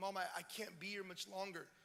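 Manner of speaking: speaking through tears. Retelling a reunion with Mom after they hugged and wept, retelling tearful words. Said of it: "we weep".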